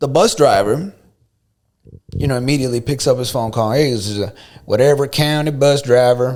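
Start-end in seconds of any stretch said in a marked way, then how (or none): 3.7-6.4 put-on American Southern accent. Quoting a county bus driver on the phone, in a Southern accent. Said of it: "I don't know why I gave him a southern accent".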